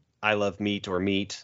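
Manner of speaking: plain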